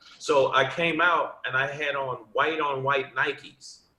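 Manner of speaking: ordinary talk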